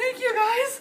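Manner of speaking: very high voice, shaking and shivering as if cold. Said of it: "I'm shaking right now. I'm that cold".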